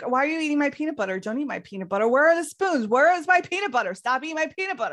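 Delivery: high-pitched angry tirade. Retelling how she yelled at her roommate: imitating someone yelling angrily. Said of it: "pissed and yelling at the roommate".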